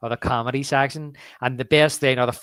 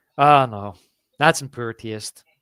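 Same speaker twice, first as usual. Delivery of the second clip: play-acted disgusted, offended, disapproving tone; 2 semitones lower, 3 dB louder than usual. Retelling a movie scene line, imitating Randy's disgust. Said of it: "Randy's so disgusted. He's like".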